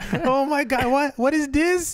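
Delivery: put-on accent from Trinidad. Picturing their mom's reaction, in a put-on Trinidadian accent. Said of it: "Trinidadian accent".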